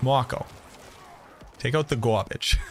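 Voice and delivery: put-on thick, heavy Brooklyn accent. Quoting a man's instruction to the speaker, in a thick Brooklyn accent. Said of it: "he had a wicked thick Brooklyn accent".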